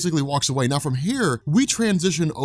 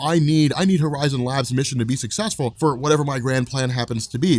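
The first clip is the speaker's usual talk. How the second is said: ordinary delivery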